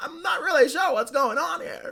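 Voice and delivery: very high, wavering, squiggly, uncertain nerdy voice. Showing how the nerd voice sounds when he's unsure: squiggly unsure nerd voice. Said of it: "just a little bit more squiggly in your voice".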